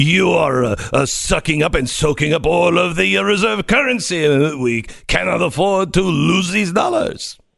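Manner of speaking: heavily put-on French accent. Answering a request to redo the point: Macron accent. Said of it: "do it in your Macron accent".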